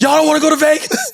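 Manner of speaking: very high, loud yelled holler. Retelling watching the game in the room, retelling own yelling at the tv. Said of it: "I'm yelling at the T V".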